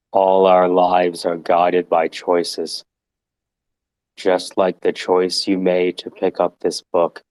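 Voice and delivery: low-energy, flat monotone read with no variation. First of two reads of a book passage, done as a flat read. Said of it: "So we'll do a flat read".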